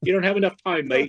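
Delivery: clumsy, bad, put-on English accent. Retelling what the studio guy told him about recording time, bad English accent. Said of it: "but with a bad English accent".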